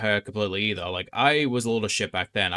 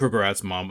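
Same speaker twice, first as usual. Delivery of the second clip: plain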